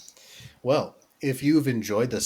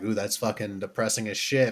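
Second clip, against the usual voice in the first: ordinary delivery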